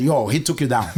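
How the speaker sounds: ordinary talk, nothing marked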